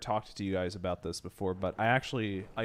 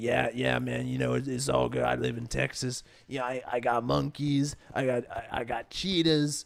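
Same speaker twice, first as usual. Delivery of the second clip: put-on loudmouth guy voice. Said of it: "that voice is gonna give me cancer".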